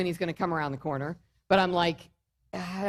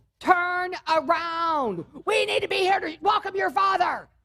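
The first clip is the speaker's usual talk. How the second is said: very high, shrill, loud yell; 11 semitones higher than usual. Retelling calling a child back to the driveway: retelling a yell at his son. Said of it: "I am now yelling".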